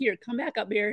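ordinary delivery

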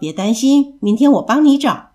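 ordinary delivery

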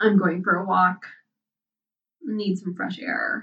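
ordinary delivery, nothing marked

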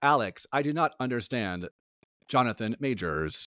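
robotic, voice-assistant-style voice. Speaker pretends to be Siri answering Alex, doing a Siri impression. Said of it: "That was my impeccable Siri impression".

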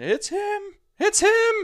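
very high, very loud, squeaky excited squeal. Retelling a phone call with Isaac, imitating Isaac's squeaky voice. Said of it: "I'll never forget his squeaky voice".

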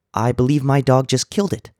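timid, jittery, high nervous little squeak. A little man answers a big biker at the counter, squeaking nervously. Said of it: "squeaked the little man, obviously very nervous".

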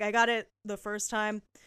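ordinary talk

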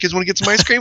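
mock casual offhand delivery. Retelling a film scene where a character covers his embarrassment: imitating a nonchalant line. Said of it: "nonchalantly goes".

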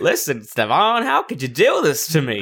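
put-on cowboy voice. Imitating Alistair confronting Stevan: Alistair as a cowboy. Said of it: "You make it sound like he's a cowboy".

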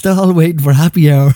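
giggly, laughing delivery. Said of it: "excuse me for laughing".

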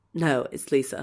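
mock-deadpan delivery. Recounting a scene where a woman answers a man's question, retelling a deadpan reply. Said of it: "she looks at him deadpan and goes".

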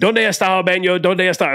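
acted screaming. Retelling rushing into a hotel lobby for the bathroom, re-enacting a scream. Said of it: "Like I'm screaming it".

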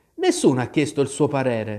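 usual speaking voice

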